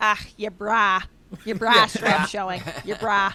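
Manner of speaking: put-on Chicago-accented speech. Retelling what mom says about a showing bra strap: imitating mom's South Side Chicago accent. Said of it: "my accent's really South Side suburbs".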